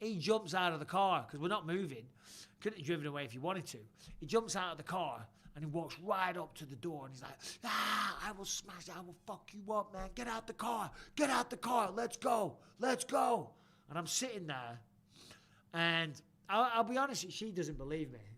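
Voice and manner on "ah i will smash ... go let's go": mock, high, maniacal, threatening raving rant. Telling a story about a man who jumped out of his car, imitating him screaming. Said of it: "he's screaming at me like a maniac".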